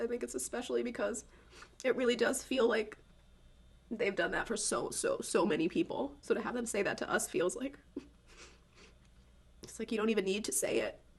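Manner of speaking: sobbing, crying hard. Reacting to something a group said to them, crying hard. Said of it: "I don't know why I'm crying so hard about this".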